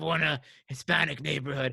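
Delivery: rough, creaky, raspy, low-key delivery. Retelling a scene from the reality show: imitating Steven Seagal. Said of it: "he's like, he's like".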